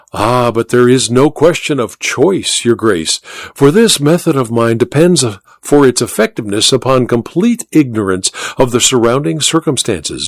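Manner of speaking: plain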